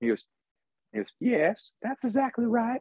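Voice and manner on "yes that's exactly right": very high-pitched, creepy voice. Retelling a man's answer to the speaker's question, in a Herbert the Pervert voice. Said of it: "He spoke like Herbert the Pervert".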